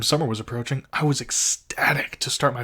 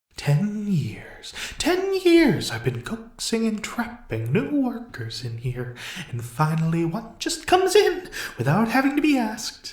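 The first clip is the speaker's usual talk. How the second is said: sadistic, sing-song, swooping and high; 9 semitones higher than usual. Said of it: "a sadistic grin in his voice".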